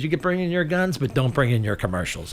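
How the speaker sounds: plain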